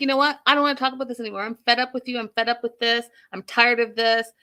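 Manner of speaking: aggressive delivery. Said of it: "she says, all, like, aggressive".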